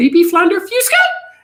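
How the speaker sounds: very high-pitched, swooping and rising sing-song. Retelling how a sister ordered food at a restaurant: imitating her high-pitched voice. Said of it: "she said it, like, all high pitched".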